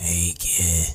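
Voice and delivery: put-on smoker's voice. Speaker repeats a line about a kid in a put-on smoker voice. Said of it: "That's my smoker voice".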